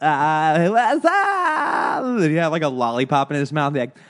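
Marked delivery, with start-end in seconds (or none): 0.0-2.0 very high, stretched, floating, spaced-out stoner voice. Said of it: "it always seemed like he was really high".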